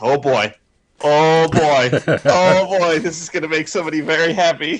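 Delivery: mock thrilled, high, loud, uncontainable excited gush. Recounting Vince's reaction, the speaker is retelling an excited outburst. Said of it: "ever seen you so excited".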